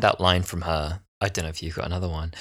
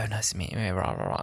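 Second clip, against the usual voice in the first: put-on thick, laid-on received pronunciation accent; 8 dB quieter than usual. Imitating an actress meeting Camilla: imitating Sarah Lancashire's RP accent. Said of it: "she has, like, a strong R P accent".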